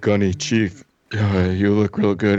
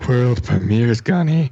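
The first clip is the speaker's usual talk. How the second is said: creepy, eerie put-on voice; 4 semitones higher than usual. Asked to say the segment title, [name] tries it, creepy imitation of the guy. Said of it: "that sounded creepy".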